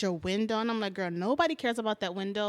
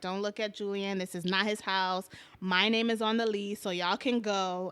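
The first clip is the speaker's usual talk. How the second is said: normal talking voice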